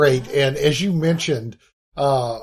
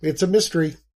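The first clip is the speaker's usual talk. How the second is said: acted, expressionless, bone-dry, flat deadpan understatement; 2 semitones higher than usual. Retelling a funny line from the episode: imitating Ed's deadpan delivery. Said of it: "Ed can have such a great deadpan delivery".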